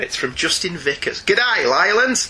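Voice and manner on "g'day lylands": put-on Australian accent. Reading out the greeting of a listener email: Australian accent. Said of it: "I don't think I will read all of it in an Australian accent".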